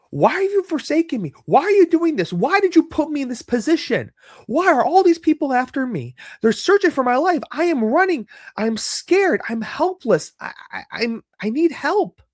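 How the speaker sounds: very high, desperate, anguished yelling. Retelling David's cry to God in the Psalms: imitating David yelling at God. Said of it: "it's like he's yelling at God".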